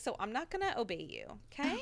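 ordinary delivery

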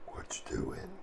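creepy, scary-sounding voice. Asking a shadowed figure prying off a vent what they're doing: creepy-sounding voice. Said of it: "You realize you're really creepy sounding".

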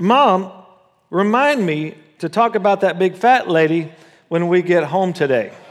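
put-on loud, high-pitched child's voice blurting out. Telling a joke about a four-year-old on a bus: loud child's voice. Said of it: "he says in that same loud voice".

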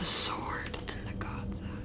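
hushed, barely voiced whisper under the breath. Playing a character, looking at a companion after realizing time has reset, whispering under your breath.

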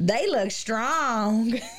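put-on straight country woman's accent. Retelling a woman's voice heard in an EVP response, straight country accent. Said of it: "This girl sounds straight country".

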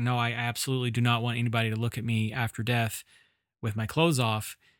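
ordinary talk

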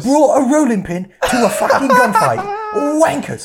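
shrill, loud, high, annoyed ranting. Joining in imitating how she sounds when annoyed in traffic, Tom Hardy in Legend impression. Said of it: "she starts sounding like Tom Hardy from Legend".

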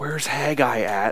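soft, slow flustered mumble.

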